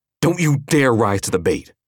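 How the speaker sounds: high, sharp, snappish tone. As an enemy taunts, a woman turns on her tensed companion, snapping. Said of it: "Lydia snapped".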